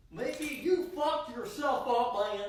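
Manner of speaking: silly cartoon dog character voice. Speaking to Mickey in a comedy bit, funny Goofy voice. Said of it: "in a very funny Goofy voice".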